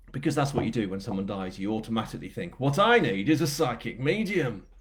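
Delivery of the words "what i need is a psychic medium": put-on Yorkshire accent laid over the reading. Joking about asking for a psychic medium: yorkshire accent. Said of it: "you also say it in a Yorkshire accent".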